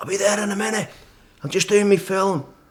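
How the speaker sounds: very high, shouted. Recalling shouting back up to a man below the summit ridge, retelling a shout. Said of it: "I'm shouting back at him".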